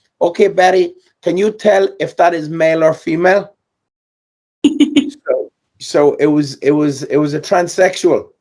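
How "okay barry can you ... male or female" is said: put-on Eastern European accent, higher. Retelling what a woman asked Barry about a bird: put-on Eastern European accent. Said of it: "in her Eastern European accent".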